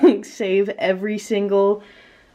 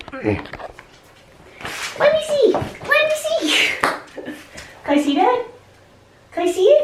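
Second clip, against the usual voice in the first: very high puppy-talk voice. The speaker asks her dog to show its toy, in a dog voice. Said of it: "I'm so sorry for my dog voice".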